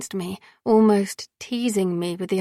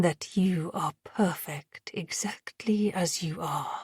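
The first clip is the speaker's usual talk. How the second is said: gravelly voice just above a whisper, hushed; 3 semitones lower, 7 dB quieter than usual. A man, bringing his face close to the narrator's: gravelly near-whisper. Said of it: "Max said in a gravelly voice a little above a whisper".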